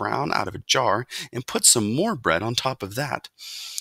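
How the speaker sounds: plain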